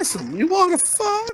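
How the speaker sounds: very high little cartoon snail voice. Acting out a sketch idea about a snail who gives directions: Tuck the Snail voice. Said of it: "He's like".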